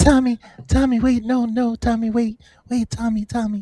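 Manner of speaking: high, suddenly gentle pleading, edge dropped. Retelling what he said to tommy: imitating a suddenly soft voice. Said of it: "He got mad soft voice all of a sudden".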